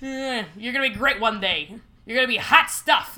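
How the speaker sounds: loud, put-on New York accent. Playing a voice that tells a kid they'll make it, in a new york accent. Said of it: "added a New York accent to your repertoire".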